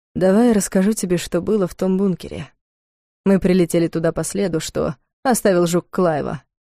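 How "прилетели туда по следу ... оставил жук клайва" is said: ordinary delivery, nothing marked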